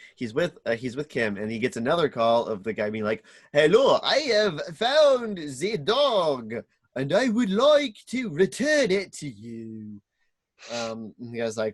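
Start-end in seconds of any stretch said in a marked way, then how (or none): 3.5-10.0 put-on very slow, swooping villainous accent. Retelling a plot where a caller offers to return a dog: villainous accent. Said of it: "What's that accent?".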